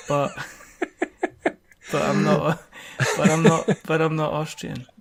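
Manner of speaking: laughing through mock pleading, voice breaking up.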